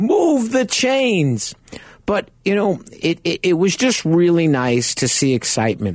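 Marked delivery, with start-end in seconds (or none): 0.0-1.5 shrill, all-out, top-of-the-lungs scream, very high. Retelling how another fan cupped his hands and yelled: imitating someone screaming very loud. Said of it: "cup his hands around his mouth and scream so loud".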